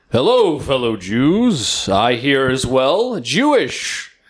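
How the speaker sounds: deep jolly voice. Pretending to sneak in wearing a big trench coat, in a Santa Claus voice. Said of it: "You sound like Santa Claus".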